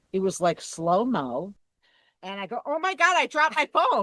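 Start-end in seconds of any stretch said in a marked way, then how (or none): 2.6-4.0 play-acted, very high, loud, rushed, panicked cry. Retelling own words as the phone falls into the water: retelling own fast exclamation. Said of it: "you said it that fast when it happened".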